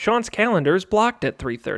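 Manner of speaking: robotic, automated machine voice. Retelling how a robot calls a hair salon: imitating a machine voice. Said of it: "imitation of a machine".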